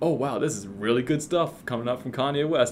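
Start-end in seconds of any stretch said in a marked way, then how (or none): none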